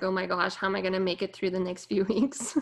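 weary, super bored, fed-up delivery. Imitating the listeners' complaint about the coming weeks: imitating a super bored listener. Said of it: "super bored and you're like".

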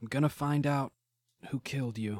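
quiet muttering under the breath to oneself. In a tabletop game, a player's character stares at a gun, muttering to oneself. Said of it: "kind of muttering to myself".

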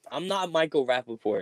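ordinary delivery

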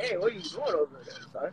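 put-on fast, soft Canadian dad voice, Canadian accent.

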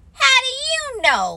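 very high-pitched, offended, indignant voice. Narrator reads Roo answering Rabbit, indignant. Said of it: "asked Rue indignantly".

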